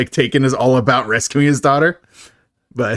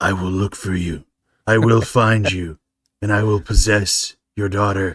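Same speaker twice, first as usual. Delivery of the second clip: put-on low, slow, menacing growl. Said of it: "my best Liam Neeson impression".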